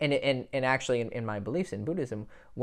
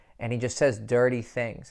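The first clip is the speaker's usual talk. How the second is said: plain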